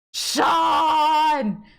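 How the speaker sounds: high loud frightened scream. Showing listeners how to react when jump-scared: startled jump-scare scream. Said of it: "Pretend you got jump scared".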